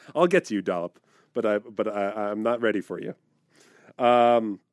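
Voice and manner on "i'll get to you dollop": usual speaking voice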